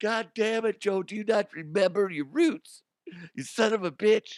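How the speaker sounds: tearful sobbing and lamenting, pitched very high. Imagining being forgotten by Joe who took the credit: mock crying. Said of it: "And I'd be sitting there crying".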